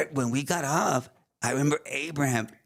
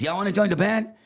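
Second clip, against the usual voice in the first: loud, pitched-up, acted-out voice; 6 semitones higher, 4 dB louder than usual. Retelling what Avi said after turning around near the table, in a loud voice. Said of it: "kind of like said it in a loud voice".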